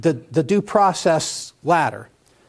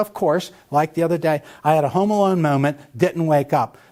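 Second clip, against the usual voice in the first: ordinary talk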